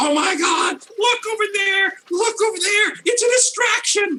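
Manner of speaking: squeaky, loud, shrill, yapping little-monster yipping. Voicing a kobold running across the market to distract everyone: loudest yipping kobold voice. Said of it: "making the loudest yipping kobold noise I can make".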